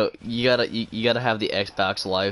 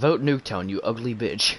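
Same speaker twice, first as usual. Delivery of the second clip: jeering, mocking online gamer voice. Quoting what a player over Xbox Live would say: imitating an Xbox Live player. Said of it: "sounds like something over Xbox Live would say".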